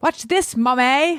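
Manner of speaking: put-on slight Australian accent. Quoting him calling to his mommy, slightly Australian-sounding. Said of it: "it sounds a little bit Australian the way I say it".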